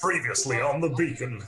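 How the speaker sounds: cheesy, deliberately awful movie-trailer announcer voice. A speaker starts a recap of the show the beacon, in an awful movie trailer voice. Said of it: "attempt an awful trailer voice".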